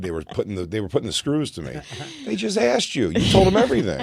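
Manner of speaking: normal talking voice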